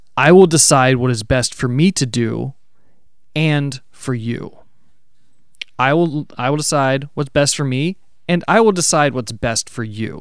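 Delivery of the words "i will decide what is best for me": ordinary delivery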